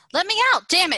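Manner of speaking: very high, loud, piercing shriek. A woman stuck behind a door screams at the voice in the hallway: screaming. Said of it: "she screamed".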